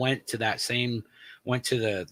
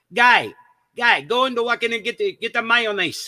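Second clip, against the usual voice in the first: put-on Greek accent, very high-pitched and loud; 12 semitones higher, 8 dB louder than usual. Retelling how the boss asked for mayonnaise from the walk-in: imitating Gus's Greek accent. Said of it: "talk with this Greek accent".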